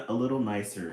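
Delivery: plain reading voice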